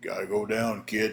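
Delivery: voice dropped way down, super deep. Retelling a match moment, quoting Nelson: imitating Nelson's super deep voice. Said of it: "in that super deep voice Nelson had".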